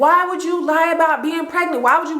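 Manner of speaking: high-pitched yelling.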